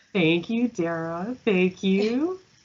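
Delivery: held-back giggles. A podcast guest thanks the host after being introduced, trying not to laugh. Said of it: "I'm trying not to laugh".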